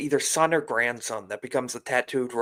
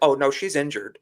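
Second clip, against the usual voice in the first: normal talking voice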